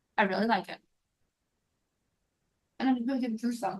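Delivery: talking with mouth full, while chewing. Tasting a freshly cut dessert on camera, talking with mouth full. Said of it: "I totally ate with my mouth full".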